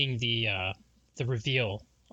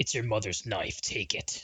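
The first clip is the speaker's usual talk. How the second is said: put-on deep, low voice; 2 semitones lower than usual. Retelling a game trailer scene, imitating a deep voice. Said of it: "someone off screen with a deep voice".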